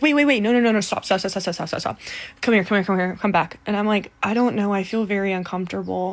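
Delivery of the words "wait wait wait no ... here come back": usual speaking voice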